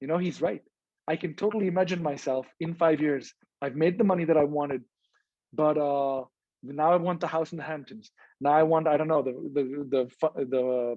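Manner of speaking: normal talking voice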